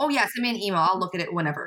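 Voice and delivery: ordinary talk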